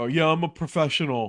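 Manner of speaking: clueless, naive-sounding wannabe voice. Imitating a wannabe who walks around claiming to be a professional football player: imitating a clueless wannabe football player. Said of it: "Think about that".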